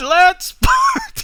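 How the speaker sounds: shouted battle cry, very high, slow, loud.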